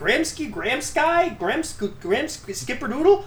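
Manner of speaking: high, fumbling mock confusion.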